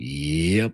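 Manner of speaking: totally chill, laid-back, barely moving single word. Imitating the cowboy in the bar, barely moving his lips: chill Bugs Bunny voice. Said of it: "and he's just like".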